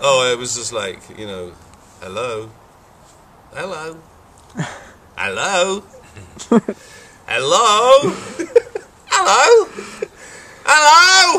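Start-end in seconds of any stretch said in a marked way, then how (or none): 2.0-11.4 very high, slow, drawn-out, increasingly crazy. Asked to do the voice from his ringtone for the others, ringtone hello voice. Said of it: "Could you do the voice for us?".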